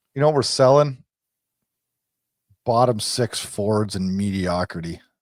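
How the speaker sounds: low, revolted, fed-up, disgusted tone. Co-host talking about the team's pivotal coming season, disgusted. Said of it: "you sounded so disgusted when you said that".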